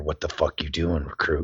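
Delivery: low, hushed drill-instructor voice. Retelling how a drill instructor snuck up and spoke in your ear: imitating Breckenridge speaking quietly in your ear. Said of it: "and in your ear, all of a sudden, you hear".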